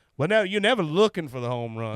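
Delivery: put-on strong Missouri accent. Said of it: "he's got that Forrest Gump accent".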